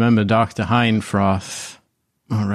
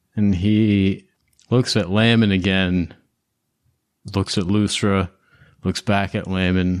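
ordinary talk

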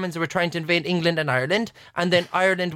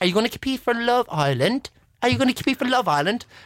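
put-on English accent, pitched up; 5 semitones higher than usual. Retelling what a student asked him: imitating an English accent. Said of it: "that sounds English".

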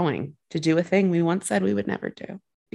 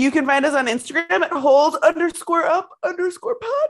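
very high words spoken through a yawn; 11 semitones higher, 4 dB louder than usual. Podcast host giving the show's social handles while yawning. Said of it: "Sorry, I was yawning".

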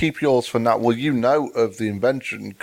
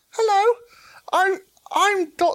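very high-pitched, slow, made-up put-on voice. Asked by the other speaker to do one, the speaker tries a very high-pitched voice. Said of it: "do a very high pitched voice now".

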